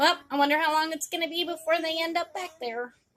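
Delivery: high, snide, sneering voice. Imitating people doubting someone just out of jail: mocking voice imitating naysayers. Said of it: "that's my little mockery voice of people".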